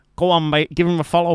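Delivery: terrible fake Scouse accent. Mocking an awful accent attempt by redoing it: bad liverpool accent. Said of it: "the worst Liverpoolian accent".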